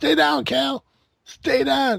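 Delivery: put-on, raspy, rough, very high yelling. Recounting yelling at a wrestler during a match, retelling a yell. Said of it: "I kept yelling at him".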